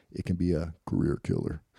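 menacing, flat, scary robotic monster drone. Host quoting a Pentagon official from a show; scary robot monster voice. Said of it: "in a scary robot monster voice".

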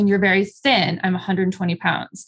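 ordinary talk

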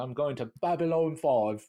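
put-on British English accent. Retelling a scene where a pilot says where he's headed: british accent. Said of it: "and he has this British accent".

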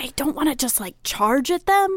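hushed, whispered voice. Player speaking to the group during a tabletop game, whispering. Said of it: "I'm whispering".

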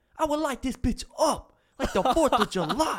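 heavy put-on New York accent, very high pitch. Retelling a stranger who came up to them at Walmart, in a huge New York accent. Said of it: "just this huge New York accent".

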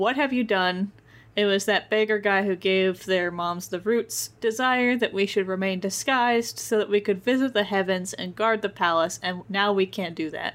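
normal talking voice

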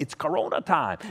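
deliberately imitated Latin American accent.

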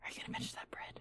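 soft, hushed whisper. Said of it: "We should probably whisper".

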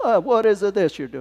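put-on stage Italian accent. Voicing a figure who speaks to Moses, in an Italian accent. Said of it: "He's Italian".

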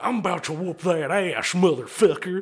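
put-on hard-man biker voice, loud and aggressive. Describing two bikers pulling chains on each other, the speaker acts one out, mock-aggressive biker voice. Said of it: "just as aggressive".

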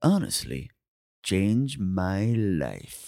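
deep, very slow, drawn-out announcer voiceover read. Picturing the host doing the voiceover: imitating a voiceover. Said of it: "doing that voiceover and going".

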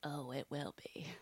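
put-on hushed, soft teenage girl voice. Recapping a scene from a show, Quinn impression. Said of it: "that's a good quinn".

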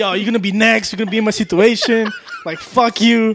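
put-on yell, swooping, as if calling from afar. Retelling how a homeless man yelled in the street: imitating someone yelling. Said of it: "he started yelling at him".

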